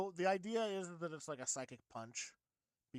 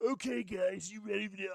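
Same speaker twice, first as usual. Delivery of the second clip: dopey, really stupid game villain voice; 3 semitones higher, 4 dB louder than usual. Trying out a new voice for Keemstar: Keemstar voice like a stupid Bowser. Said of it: "a voice like this".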